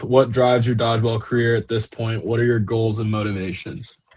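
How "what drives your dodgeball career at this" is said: ordinary delivery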